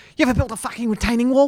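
put-on very high, pushy, aggressive Cockney accent. Speaker imitates a man who tried to recruit them to build a retaining wall; aggressive Cockney accent. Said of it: "he's like Cockney".

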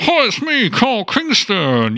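high, swooping, drawn-out voice with squashed cheeks. Doing an impression of a former radio colleague: Carl Kingston impression, cheeks squashed. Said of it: "which I will do an impersonation of now".

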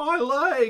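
shrill, very high, very loud cartoon scream. A missed shot hits a pedestrian in the back, who yells in SpongeBob episode voice. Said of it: "But in the SpongeBob episode voice".

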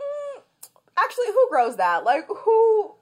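put-on very high, drawn-out, unprofessional voice, polish dropped. Retelling own reaction to a caller's odd request: imitating own voice dropping professionalism. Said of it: "my professional voice slipped".

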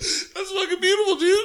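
high-pitched crying voice, deeply moved, choked through tears. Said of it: "I'm crying right now".

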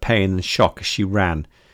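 ordinary delivery

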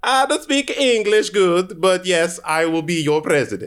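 put-on Kazakh accent. Do an impression for the others, who name it as Borat: Borat voice. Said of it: "That's Kazakhstani".

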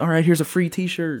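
put-on yelling. Mocking a concert stage speaker handing out prizes: imitating someone yelling. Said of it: "just you're yelling and it's like".

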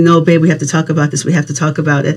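ordinary delivery

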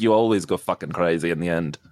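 light, slight put-on Irish accent. Retelling what a character said in the show: imitating a little Irish accent. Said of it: "a little Irish accent when he was like".

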